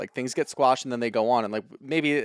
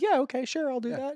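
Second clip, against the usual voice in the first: put-on agreeable voice, higher; 13 semitones higher than usual. Acting out Vicky agreeing to a request: Vicky impression. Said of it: "That's a good Vicky impression".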